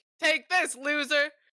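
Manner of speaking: loud high-pitched shout. Voicing a creature yelling at a player walking away: yelling. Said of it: "yells at you one final time and is like".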